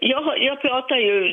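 ordinary talk, nothing marked

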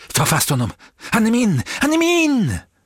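very high-pitched, wild, swooping shriek. The grey man, as the crowd points out the one he wants, screaming. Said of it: "skrek den grå mannen".

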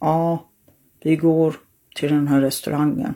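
flat, emotionless, robot-like monotone. Showing how she sounded on a medicine her kids called robotic, imitating a robotic flat voice. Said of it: "du är ju som en robot".

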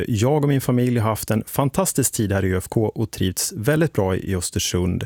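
normal talking voice

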